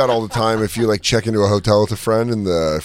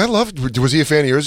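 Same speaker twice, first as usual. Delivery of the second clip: ordinary delivery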